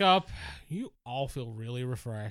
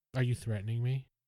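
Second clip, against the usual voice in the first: voice dropping deeper. A character answers someone who said they could fry the place, deeper voice. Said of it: "her voice gets deeper".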